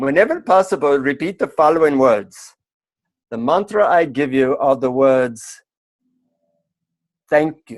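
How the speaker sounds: put-on Indian English accent, put on in character. Quoting the mantra a man gave the speaker, in an Indian accent. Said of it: "he says in his Indian accent".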